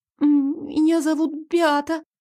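tiny, thin, high little squeak. The heroine gives her name to the passage keeper, thin squeak. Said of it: "тоненько пискнула я".

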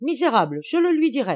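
shrill shouting. Narrator reads Madame Vandenbourg's line as she drives the fake doctor out: shouted. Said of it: "lui criait en le chassant".

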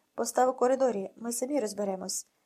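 ordinary talk

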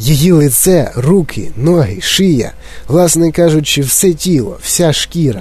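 plain

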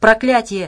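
loud bark of sheer despair. As trouble hits their gondola, a man barks in despair. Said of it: "в отчаянии гаркнул Абрамс".

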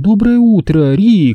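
sweet, high-pitched, purring voice. A narrator reads Nina greeting Rick as she wakes, a sweet purr. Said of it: "промурлыкала Нина и сладко потянулась".

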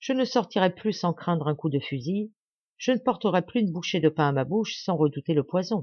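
ordinary delivery, nothing marked

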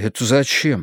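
bewildered, confused, at a loss. Narrator reads Gagarin, taken aback by the speaker's remark: bewildered question. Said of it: "растерялся он".

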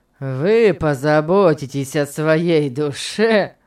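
slow, scornful, contemptuous delivery. A man throws his companion's words back at him, contemptuous. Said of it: "презрительно повторил Том".

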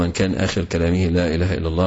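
ordinary delivery

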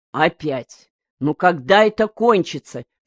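ordinary delivery, nothing marked

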